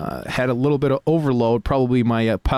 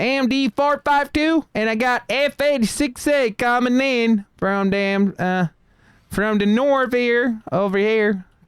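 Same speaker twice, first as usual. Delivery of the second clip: put-on very high-pitched Southern US male accent; 11 semitones higher than usual. Making a radio call to a partner, in a southern us accent. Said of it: "Now I sound like a guy from South".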